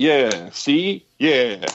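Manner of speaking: put-on old-time movie gangster voice. Talking with another speaker, in an old-time gangster voice. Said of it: "all the gangsters talk like that".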